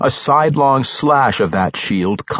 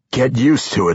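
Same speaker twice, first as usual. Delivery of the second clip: said with a growl. Narrator reads a fight scene; Entreri answers his staggering opponent, growled. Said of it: "Entreri growled".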